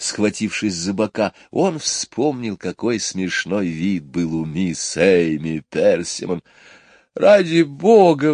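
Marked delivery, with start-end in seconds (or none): 7.1-8.3 high, loud pleading between fits of laughter. Michael, laughing with Jane and the others, calls to them, pleading. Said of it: "взмолился Майкл".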